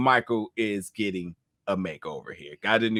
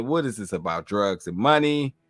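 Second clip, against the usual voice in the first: plain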